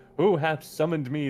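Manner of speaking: thunderous, booming voice of a mighty stag. Narrator voicing a summoned stag apparition, booming deer voice. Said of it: "The deer booms".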